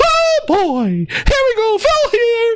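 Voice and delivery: put-on cartoon mouse character voice. Mocking Phil Spencer visiting Blizzard headquarters: Phil Spencer acting like Mickey Mouse. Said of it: "Phil showed up like Mickey Mouse".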